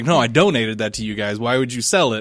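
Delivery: ordinary talk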